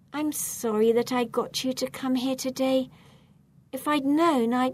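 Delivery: ordinary delivery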